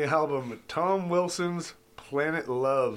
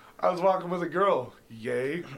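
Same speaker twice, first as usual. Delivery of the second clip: ordinary talk, nothing marked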